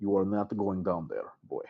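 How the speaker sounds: grave serious tone. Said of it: "And Bodzin kind of nods, and he looks at you".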